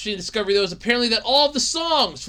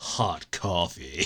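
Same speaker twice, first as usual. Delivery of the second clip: very deep, very soft, hushed, stylized phrase; 10 dB quieter than usual. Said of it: "I love saying it like that".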